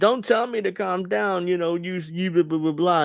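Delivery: acted high, heated, mouthing-off argumentative voice. Imitating an argument heard on the streets: imitating a street argument. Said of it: "an argument I would hear on the streets".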